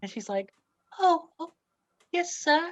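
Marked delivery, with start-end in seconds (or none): 1.0-2.7 tiny, very high little lady voice. Game master voicing a little lady who keeps coming to hang up posters, little lady voice. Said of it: "It's a little lady".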